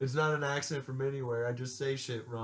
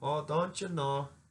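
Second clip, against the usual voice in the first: over-the-top put-on Minnesota accent; 2 semitones higher than usual. Joking about northern accents, in a mock Minnesotan accent. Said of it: "like weird Canadian Southerners".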